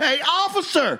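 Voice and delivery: high, slow calling out. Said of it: "yell at the police officer".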